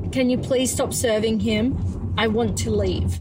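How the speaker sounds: ordinary delivery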